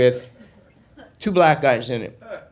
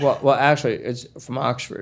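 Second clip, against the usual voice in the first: usual speaking voice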